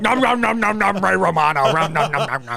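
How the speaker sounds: nom-nom chomping monster voice. Doing Ray Romano as a Muppet like Cookie Monster. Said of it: "sounds like fucking Cookie Monster".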